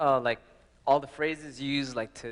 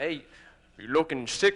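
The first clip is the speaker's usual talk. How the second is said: failed put-on Austrian accent. Retelling a taunt from the movie Pumping Iron: attempted Arnold Schwarzenegger accent. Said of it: "that's the wrong accent".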